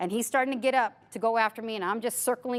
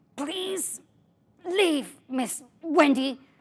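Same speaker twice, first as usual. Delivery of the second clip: very slow, drawn-out, grudging grumble; 4 semitones higher than usual. Retelling a student finally asking her to leave: imitating someone grumbling. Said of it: "he grumbles finally".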